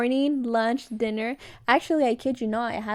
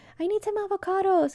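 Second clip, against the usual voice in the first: put-on yelling, higher pitch; 9 semitones higher than usual. Retelling complaining to mom about missing avocados: imitating someone yelling. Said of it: "yelling at my mom".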